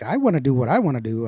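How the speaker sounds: usual speaking voice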